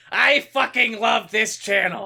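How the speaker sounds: very high-pitched cartoon voice. Doing a mock celebrity cameo praising the channel: Gilbert Gottfried impression. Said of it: "I am Iago from Aladdin".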